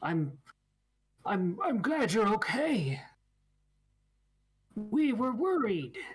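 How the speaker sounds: slow, halting delivery, words pieced together one by one. Voicing a creature greeting a player in very broken Common: speaking very broken Common. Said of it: "he tries to speak in very broken common".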